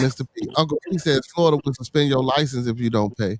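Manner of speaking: normal talking voice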